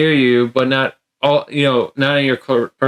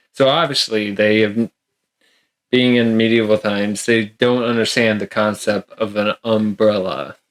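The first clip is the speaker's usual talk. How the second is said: ordinary delivery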